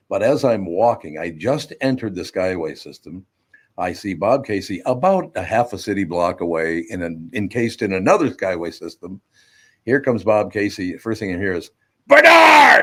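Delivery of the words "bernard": high, loud, booming shout carrying across distance. Retelling hearing someone shout a name from a block away: Bob Casey impression calling out. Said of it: "That's a pretty good impression".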